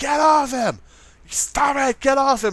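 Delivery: put-on very high, stretched-out screaming. Retelling breaking up a dog fight: retelling a scream. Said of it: "and I'm screaming".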